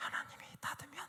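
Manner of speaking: soft, breathy, shrinking voice. Showing how the voice drops on the second half of a confession, quieter voice. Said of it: "이게 그 뒤에 것은 소리가 작아지는 거예요".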